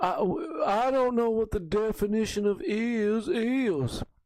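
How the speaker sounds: slow, drawn out, evasive, stumbling at first. Retelling an old courtroom answer to the others: Bill Clinton impression. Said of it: "my Bill Clinton impersonation".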